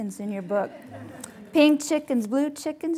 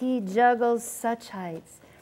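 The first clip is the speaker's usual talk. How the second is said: ordinary talk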